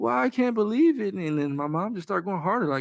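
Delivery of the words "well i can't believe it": put-on tearful crying voice, pitched higher. Retelling how someone reacted in an argument: imitating someone crying. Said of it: "she just instantly started crying".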